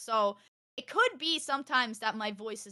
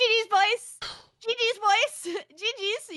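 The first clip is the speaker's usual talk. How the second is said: very high, very loud, very slow, annoying holler; 12 semitones higher, 8 dB louder than usual. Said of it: "I'm like".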